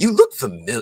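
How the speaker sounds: bad, loud, very high put-on Broadway accent. Retelling meeting a show's host who half-recognizes the speaker, bad Harold impression. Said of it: "this is my bad Harold in, impersonation".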